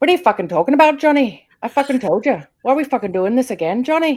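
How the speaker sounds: very loud, shouted, put-on Irish accent. Asked to say something in irish, answering in an irish accent. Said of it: "say something in Irish?".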